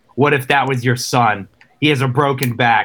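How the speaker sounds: imitated woman's voice. Retelling a game scene, quoting the lady next to the speaker: imitating the lady nearby. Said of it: "the lady next to me was like".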